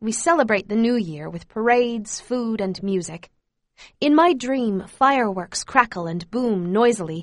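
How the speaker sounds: ordinary delivery, nothing marked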